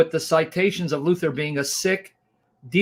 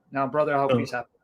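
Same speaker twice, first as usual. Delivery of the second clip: ordinary talk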